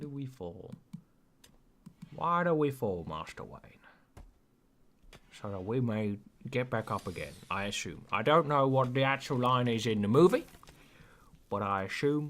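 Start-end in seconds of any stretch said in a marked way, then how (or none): 0.0-8.0 bad put-on voice, heavy hiss, every s overstressed. Quoting a movie line about falling: bad Michael Caine impression. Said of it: "that's not a good Michael Caine".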